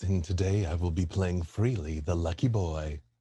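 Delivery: very low, chest-resonant, rumbling smooth jazz voice. A player introduces their character at the table, in Freely's smooth jazz voice. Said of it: "I didn't know Freely had a smooth jazz voice".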